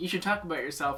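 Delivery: ordinary delivery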